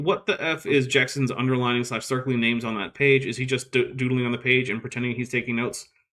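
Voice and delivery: ordinary talk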